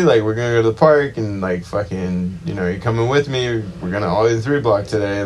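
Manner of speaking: ordinary talk, nothing marked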